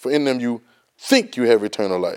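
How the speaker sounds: the word think stressed. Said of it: "underline the word think".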